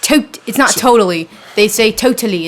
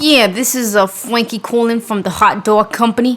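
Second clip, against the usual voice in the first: New Jersey guy accent. Showing his response to a caller, doing the jersey accent. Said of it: "So do the Jersey accent".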